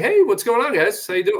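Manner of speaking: mock overly casual voice. Retelling how they greet tables as a server, mock too-relaxed. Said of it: "the vibe is, like, a little too relaxed".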